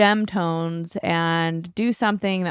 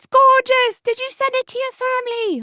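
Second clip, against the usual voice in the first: put-on Australian accent, loud, very high, excited shout; 5 dB louder than usual. Retelling a grandpa raving excitedly over the phone, in a put-on Aussie accent, shouting. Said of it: "you got to do his Aussie voice".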